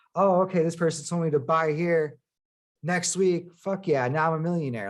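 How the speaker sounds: usual speaking voice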